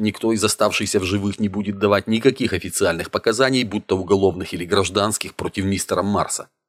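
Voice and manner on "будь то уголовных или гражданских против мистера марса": plain reading voice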